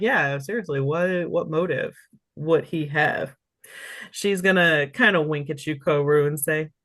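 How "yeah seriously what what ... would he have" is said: normal talking voice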